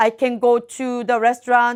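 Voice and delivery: slow, halting, repetitive beginner English. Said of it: "반복적인 단어를 많이 사용해요".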